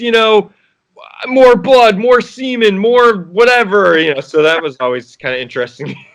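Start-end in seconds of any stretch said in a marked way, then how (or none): 1.3-4.0 high, loud screaming rant. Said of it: "he'd always be screaming".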